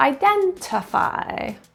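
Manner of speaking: identify, second syllable stressed. Pronunciation lesson modelling a word: identify, stress on second syllable. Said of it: "Stress in the second syllable".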